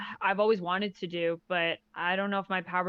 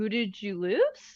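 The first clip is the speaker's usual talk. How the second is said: put-on awkward, hesitant, hollow-sounding, insincere delivery. Explaining how her question comes off to people, retelling an insincere-sounding tone. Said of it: "makes me sound like kind of like".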